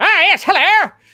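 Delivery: put-on mid-Atlantic accent. Guessing how a monster would talk: mid-atlantic accent. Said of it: "mid-Atlantic accent".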